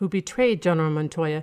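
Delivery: plain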